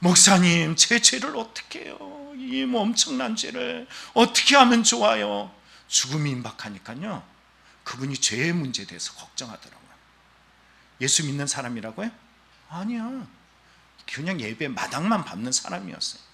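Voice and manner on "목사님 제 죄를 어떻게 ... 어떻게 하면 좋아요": high, weeping, tearful, begging voice. Retelling an elderly person's tearful plea to the pastor: imitating someone crying. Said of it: "막 울면서 뭐라 그랬냐면".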